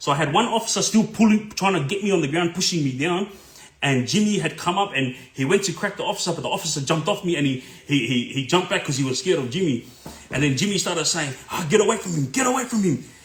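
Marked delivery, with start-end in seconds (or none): 11.5-13.0 half-shouted, held-in, pitched-up mild yell. Retelling a struggle with police, quoting a man shouting at an officer, retelling a yell. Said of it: "as he was yelling that".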